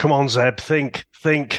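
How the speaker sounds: put-on stressed-out voice. Quoting a line where Zeb is stressing out: imitating Zeb stressing out. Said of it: "Zeb is stressing out and he's like".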